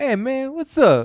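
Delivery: very high-pitched put-on jive slang talk. Recounting how a man talked at dinner with a family: retelling his jive talk. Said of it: "he starts talking like jive".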